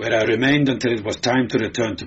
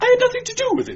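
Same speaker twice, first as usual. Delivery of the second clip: very high, frantic, hysterical pleading voice. A questioned man denies everything to his interrogator: growing hysterical. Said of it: "Pomero was growing hysterical".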